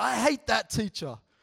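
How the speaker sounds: high, loud yell. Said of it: "she just yelled out".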